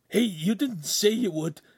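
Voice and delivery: very high-pitched gasping protest. A man protests after his companion strikes a woman, gasped. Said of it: "Ugolino gasped".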